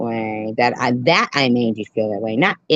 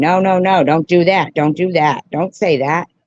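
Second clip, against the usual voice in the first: high, loud yelling at full force; 5 semitones higher, 5 dB louder than usual. Retelling how they yelled at others to stop: imitating own yelling. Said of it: "I'm yelling".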